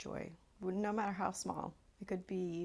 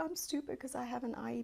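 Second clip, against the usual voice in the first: put-on sobbing child voice, higher; 6 semitones higher than usual. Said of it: "he's sobbing, like, unconsolable".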